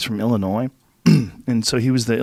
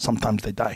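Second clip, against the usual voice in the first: quieter, heavy put-on Korean accent; 3 semitones lower, 7 dB quieter than usual. Retelling what an intense former troop trainer said, in a thick korean accent. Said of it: "with his thick Korean accent".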